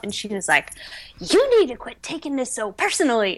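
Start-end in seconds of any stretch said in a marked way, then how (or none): 1.2-3.4 put-on scream, higher pitch. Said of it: "screaming at me in the store".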